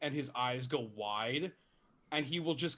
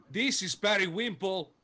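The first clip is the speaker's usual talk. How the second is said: loud, high-pitched calling out; 5 semitones higher, 4 dB louder than usual. Voicing a shopkeeper in a game, calling to the back room: calling out loudly. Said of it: "he will call out that loudly".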